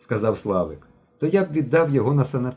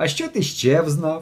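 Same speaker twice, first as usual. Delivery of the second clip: teasing, derisive, mocking, scoffing tone; 4 semitones higher than usual. Narrator reads Mishko questioning Genka, mocking. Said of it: "глузливо запитав Мишко".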